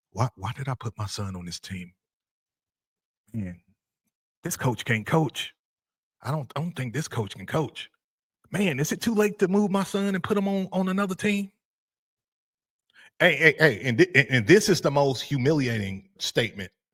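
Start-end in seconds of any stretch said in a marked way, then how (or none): 0.1-11.5 half-whispered gossip with swooping pitch, parent-like. Acting out parents of a losing team doubting the coach: imitating parents half-whispering. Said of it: "they're starting to whisper".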